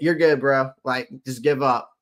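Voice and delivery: ordinary talk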